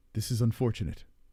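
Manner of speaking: calm, unbothered put-on voice. Imagining a doctor giving terrible news, answering unfazed: imitating Jiri Prochazka. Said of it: "And then Yuri just looks at him and goes".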